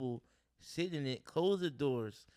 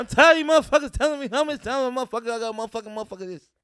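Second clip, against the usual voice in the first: shrill, very high, very loud full-volume tirade; 10 semitones higher, 15 dB louder than usual. Showing another speaker that they can do a Bernie Mac voice. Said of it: "I can do Bernie Mac voice".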